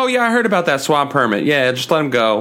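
plain

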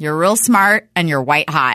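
ordinary talk

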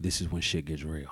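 soft, hushed half-whisper. Retelling what the instructor said at the open door: imitating a half-whisper. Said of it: "leaned over and whispered in my ear".

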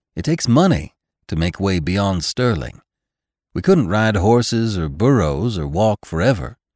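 usual speaking voice

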